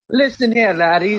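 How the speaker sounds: put-on Irish brogue, fighter-style, laid on thick. Acting crazy with friends, [name] does a Conor McGregor impersonation. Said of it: "doing like a Conor McGregor impersonation".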